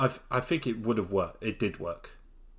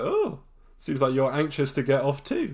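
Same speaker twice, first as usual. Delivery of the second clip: mock surprise, audible, with swooping pitch; 5 semitones higher, 6 dB louder than usual. Retelling a scene, imitating Sayid's surprised voice as he speaks to Kate. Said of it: "the surprise in his voice".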